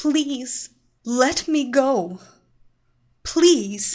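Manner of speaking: begging, imploring. A woman held by her captor, pleading. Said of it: "she pleaded".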